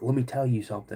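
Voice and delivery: ordinary talk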